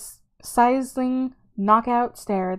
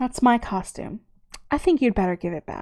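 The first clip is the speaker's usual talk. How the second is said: calm, poised, charming voice. Reading a woman stepping toward another character, in a calm, charming voice. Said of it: "in a calm, charming voice said".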